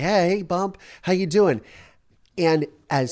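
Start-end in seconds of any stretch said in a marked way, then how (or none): 0.0-1.6 very, very excited, pitched-up voice. Retelling a father entering the room, imitating someone excited. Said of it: "He's very, very excited".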